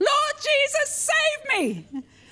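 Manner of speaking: very high, loud, drawn-out yell at top of voice. Retelling crying out during a vision in a church service: imitating own yell. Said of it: "at the top of my voice, ... I yelled".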